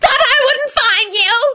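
very high-pitched screeching voice. Narrator reading a filthy creature's accusing line to Lupin: high-pitched screech. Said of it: "He screeched in a high-pitched voice".

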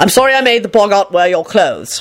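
ordinary delivery

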